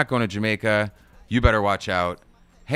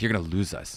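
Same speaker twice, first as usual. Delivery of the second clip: mock ominous tone, quieter; 3 semitones lower, 6 dB quieter than usual. Retelling what the mom duck says to her family: imitating an ominous line. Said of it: "It was almost, like, ominous".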